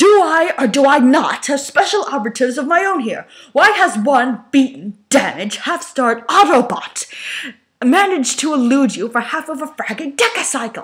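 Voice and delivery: furious, raging. Megatron turns on Soundwave after a fruitless search, Megatron in a rage. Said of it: "[name]'s fist clenched".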